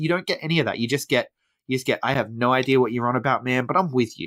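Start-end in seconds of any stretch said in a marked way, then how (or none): none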